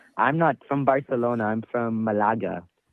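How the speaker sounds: put-on Spanish accent. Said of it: "You don't speak the King's Spanish?".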